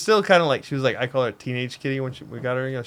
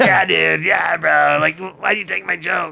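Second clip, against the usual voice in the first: strained put-on voice, pitched higher; 5 semitones higher, 7 dB louder than usual. Trading impressions, a speaker takes a turn at a strained Steve-O voice. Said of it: "You gotta strain".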